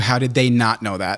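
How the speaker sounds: ordinary talk, nothing marked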